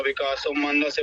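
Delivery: plain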